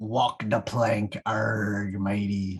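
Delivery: put-on pirate voice, very slow, very drawn out. Kicking off a segment about walking the plank, put-on pirate voice. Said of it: "That's my pirate".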